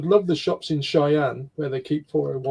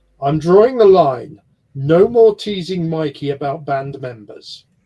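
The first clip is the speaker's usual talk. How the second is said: mock-stern tone, much louder; 8 dB louder than usual. Speaker retells how Tiff laid down a rule for the group, imitating Tiff's stern voice. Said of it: "in her stern voice".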